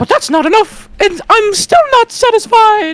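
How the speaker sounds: belted very high-pitched and very loud. Quoting how Monokuma is voiced by a voice actor, doing Monokuma in a Mickey Mouse voice. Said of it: "gives Monokuma a Mickey voice".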